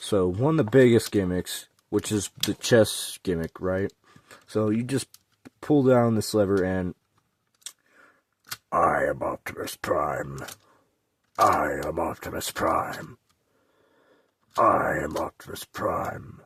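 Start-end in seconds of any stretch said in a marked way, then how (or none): 8.7-16.2 low, slow heroic robot voice. Showing a toy's chest gimmick, the speaker does the Optimus Prime voice. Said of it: "why are you doing the voice?".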